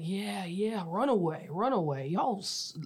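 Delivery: mocking, drawn-out taunting jeer. Retelling fans in the stadium corner taunting from the stands: imitating fans yelling. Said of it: "yelling at me, like".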